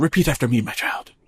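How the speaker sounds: unhinged, over-the-edge, crazed preacher voice. Quoting Father Renaud forcing a baptism at gunpoint: imitating Father Renaud sounding crazy. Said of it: "But he sounds crazy here".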